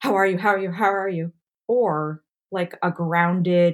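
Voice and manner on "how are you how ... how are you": fretful, anxious, nervous, rapid delivery. Contrasting two kinds of moms, acting out the first: mimicking an anxious helicopter mom. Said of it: "An anxious helicopter mom nervously asking".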